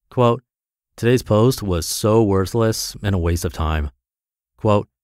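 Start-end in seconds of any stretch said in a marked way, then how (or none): none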